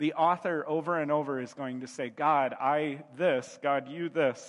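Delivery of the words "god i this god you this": very slow, broken caveman phrasing. A speaker explaining a psalm's back-and-forth with god: caveman talk. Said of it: "I'm talking like a caveman now".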